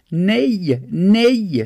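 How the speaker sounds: high scream with "nej" drawn out. A girl tries to pull free from a man holding her: screamed. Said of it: "skrek Vanja".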